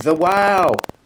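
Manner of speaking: put-on delighted, excited toddler voice. Retelling how Quimbletide points at Christmas lights, imitating Quimbletide's wow. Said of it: "pointing at the one going".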